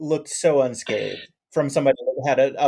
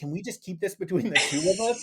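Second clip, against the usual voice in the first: really bad put-on Southern accent, pitched up; 5 semitones higher, 6 dB quieter than usual. Quoting a movie character's line: imitating a bad southern accent. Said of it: "he had a really bad Southern accent".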